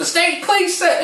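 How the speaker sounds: very high, loud, frantic shrieking scream. Retelling how a distant relative stopped a cousin at the door: imitating someone screaming. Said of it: "She's screaming".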